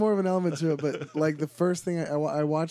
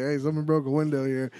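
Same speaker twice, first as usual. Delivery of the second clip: ordinary talk, nothing marked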